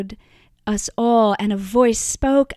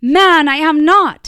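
very loud, very slow, drawn-out shout; 6 semitones higher, 8 dB louder than usual. A man accused by someone at the fire denies it: shouting. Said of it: "Peter shouted even louder".

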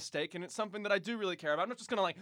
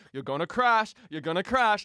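loud shout, repeated twice; 8 dB louder than usual. Retelling what was shouted into the microphone while driving: retelling a shout. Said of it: "I had actually shouted into the microphone".

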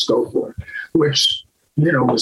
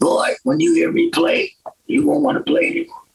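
very high, rasping voice. Retelling a phone call with Jimmy Smith: imitating Jimmy Smith's voice. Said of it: "his unmistakable voice is".

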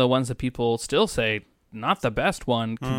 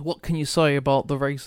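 put-on light, toned-down Scottish accent. Speaker recalls David Coulthard asking the race winner a question: David Coulthard Scottish accent. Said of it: "That's not my biggest Scottish accent".

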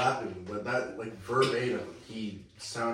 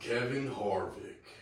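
fake, put-on country accent; 3 dB quieter than usual. Reading out race finishers' names in a put-on country accent. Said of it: "you gotta put the country accent".

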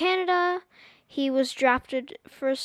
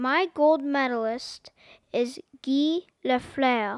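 put-on attempted French accent. Asked for a gold medalist for episode 20, answering in put-on French accent. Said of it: "in my best French accent ever".

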